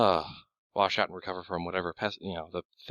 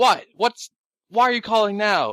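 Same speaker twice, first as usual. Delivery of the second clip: shrill, high, very loud yell; 11 dB louder than usual. Players call out on the radio amid gunfire and [name] answers, [name]'s voice. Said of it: "[name]'s voice going".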